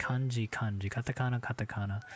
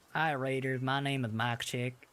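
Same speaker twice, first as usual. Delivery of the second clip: put-on Southern accent; 3 semitones higher than usual. Greeting raiders during a Southern theme: put-on Southern accent. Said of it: "this ain't my real accent".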